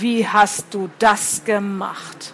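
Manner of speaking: threatening, menacing hiss, delivered very slowly. Narrator reads Walt, newly appeared beside the narrator, questioning them, hissing threateningly. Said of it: "zischte er und seine Stimme klang unverkennbar drohend".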